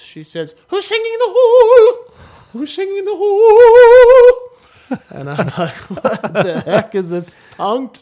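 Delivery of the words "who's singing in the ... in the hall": put-on very high, very loud, shrill shouting in Welsh accent. Retelling a choir teacher calling out in the hall, Mrs. Hall's Welsh accent. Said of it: "she's from Wales with an accent".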